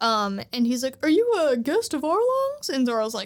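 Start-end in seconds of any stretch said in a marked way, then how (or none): 1.0-2.7 sudden jump way up into a very high cartoon voice. Retelling the story where Zoro meets Hachi, doing a Hachi impression. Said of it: "that's a pretty good Hachi impersonation".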